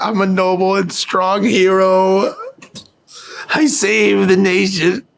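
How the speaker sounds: high sobbing, "hero" drawn out. A storyteller voices a character's words to the players, crying while talking. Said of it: "He's crying".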